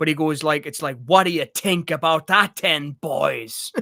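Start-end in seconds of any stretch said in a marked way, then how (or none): 1.1-3.7 exaggerated, poor fake Irish accent, slow and drawn out. Retelling how someone sounds doing it: Vinnie Jones bad Irish accent. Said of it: "Vinnie Jones does a really bad one... it's literally like this. Forgive me for doing this".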